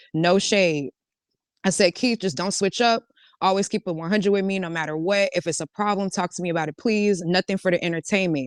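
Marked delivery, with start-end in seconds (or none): none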